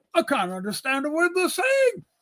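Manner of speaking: swooping put-on old English gentleman voice. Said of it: "he was an old English guy".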